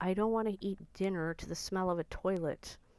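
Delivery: normal talking voice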